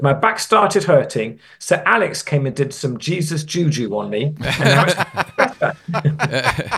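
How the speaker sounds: slow, laughing, put-on Italian accent voice.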